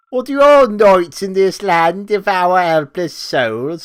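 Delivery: put-on failed Australian accent. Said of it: "I can't do an Australian".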